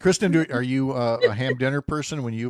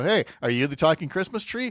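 fast, mocking, tongue-in-cheek sarcastic tone; 3 semitones higher than usual. Retelling what they said to a fake tree after an escalator, retelling own sarcastic remark. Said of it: "my sarcastic remark".

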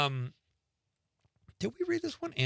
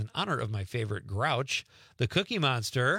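ordinary talk, nothing marked

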